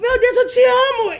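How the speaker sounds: very high, loud, screaming adoring fan voice. Retelling how a fan burst into an interview, imitating a screaming fan. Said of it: "ela veio gritando".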